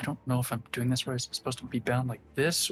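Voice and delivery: unsure muttering under breath. Tabletop player voicing his character unsure of his work, muttering under breath. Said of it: "muttering myself under my breath".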